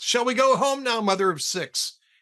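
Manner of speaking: mock loud yell. Telling a joke where a husband calls out at a party: retelling a call at top of voice. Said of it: "top of his voice".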